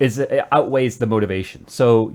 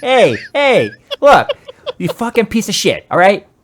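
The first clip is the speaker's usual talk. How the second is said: put-on tough-guy New York voice, higher and louder; 10 semitones higher, 7 dB louder than usual. Imagining an angry boss walking in: Joe Pesci impression. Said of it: "in comes Joe Pesci".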